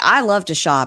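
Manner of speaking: ordinary talk, nothing marked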